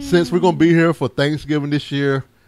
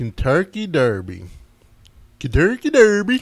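Swedish-like puppet chef accent; 3 dB quieter than usual. Repeating a phrase you are accused of saying differently, sounding like the Swedish Chef. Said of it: "I sound like the chef off of".

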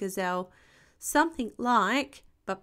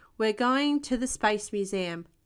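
plain reading voice

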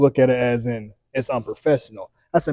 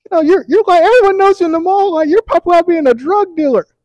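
very high, loud, put-on woman's voice; 7 dB louder than usual. Telling how a woman you had cussed out a week earlier talked to you, imitating a woman's voice. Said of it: "Was that her real voice?".

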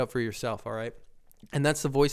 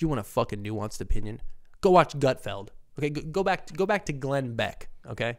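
heated, stern, angry ranting. Responding to a suggestion to stop playing clips: angry and serious. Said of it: "I'm getting all angry and serious".

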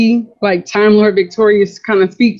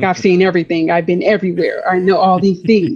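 normal talking voice

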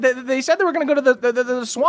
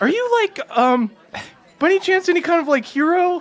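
really jittery, unsure, nervous, pitched-up; 5 semitones higher than usual. The narrator voices a man questioning a dwarf character, nervous. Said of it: "he's like really fucking nervous".

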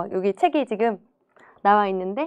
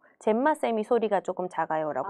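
plain

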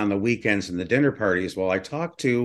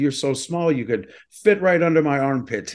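best-effort put-on English accent, pitched up; 5 semitones higher than usual. Retelling a friend's story of the father's remark: English accent. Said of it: "best English accent".

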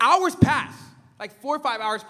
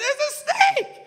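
put-on very high, alarmed, screaming voice. Retelling an aunt running from a snake: imitating aunt screaming.

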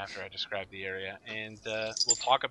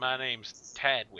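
put-on British-Texan accent with rural drawl; 3 semitones higher than usual. Voicing an ox driver greeting travelling squires: British Texan accent. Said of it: "I'm British Texan".

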